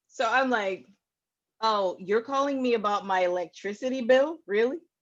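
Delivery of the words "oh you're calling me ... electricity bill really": put-on skeptical, doubtful tone. Retelling a call with a phone caller, imitating own skeptical tone. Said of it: "he didn't like my tone".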